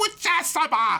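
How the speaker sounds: very high-pitched henchman voice. Describing a series villain, imitating his lackeys: high-pitched lackey voice. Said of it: "high-pitched voice, you know, lackeys".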